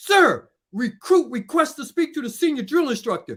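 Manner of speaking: acted disrespectful attitude. A former recruit retells addressing the drill instructors with a bad-attitude yell. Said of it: "I kind of say it in a bad attitude with a bad tone".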